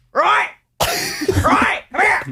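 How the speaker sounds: very high, sing-song, swooping calling voice. Showing how the boss calls for the dog: Jeff impression. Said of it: "I can do my boss, Jeff, pretty well".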